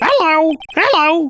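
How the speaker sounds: put-on parrot voice. Showing the parrot's squawk noise: Marge Simpson voice. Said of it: "the voice for this bird is Marge Simpson".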